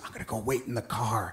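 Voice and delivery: soft, low, hushed, under-the-breath half-whisper. Retelling a partner's remark at a grave: imitating a half-whisper. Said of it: "Pete whispers".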